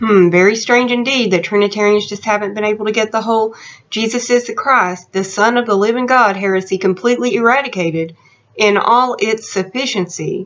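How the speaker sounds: ordinary talk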